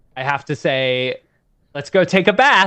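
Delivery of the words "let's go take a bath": put-on high-pitched, very strong, full-on American accent. Showing how words are said to a daughter: super american accent. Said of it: "the ones that I go super American on".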